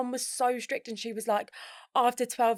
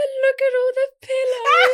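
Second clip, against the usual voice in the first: mock tearful pleading, higher and louder; 13 semitones higher, 10 dB louder than usual. Retelling being kept out of a sleepover as a child: imitating own childhood crying. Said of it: "my mum does this impression".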